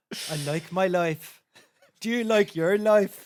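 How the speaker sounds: very loud, high, put-on Irish accent. Asked by the other speaker to give their best irish accent. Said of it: "your best Irish accent".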